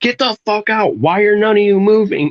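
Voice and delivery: mock very high, loud, furious screaming yell. Recounting ordering everyone out of a bar: retelling yelling at bar crowd. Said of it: "I'm just gonna be like screaming, like yelling at people to get out".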